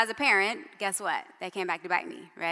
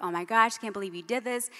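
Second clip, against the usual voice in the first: put-on panicked outburst. Retelling a father finding his hidden daughter: imitating someone flipping out. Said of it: "flipping out".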